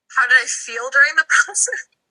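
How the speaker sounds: talking through a light little laugh. An interviewee repeats the interviewer's question back, laughing a little while talking. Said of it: "sorry, I'm laughing a little bit".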